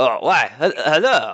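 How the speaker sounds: put-on accidental French accent slipping in. Voicing the innkeeper Lewis greeting the party: accidental French accent. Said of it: "everyone is French now".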